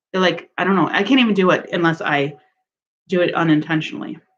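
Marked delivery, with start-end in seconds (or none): none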